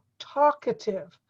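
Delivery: middle a barely audible, reduced vowel. Teaching a learner pronunciation, modeling the word with a barely audible middle a. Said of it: "You barely hear the A in the middle".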